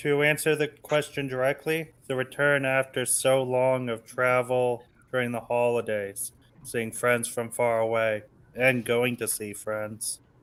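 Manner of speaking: soft, downcast, gloomy, mopey reading. Answering the question directly, reading the answer like Eeyore. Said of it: "you read that like Eeyore".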